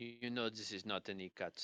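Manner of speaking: put-on light French accent. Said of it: "a slight French accent".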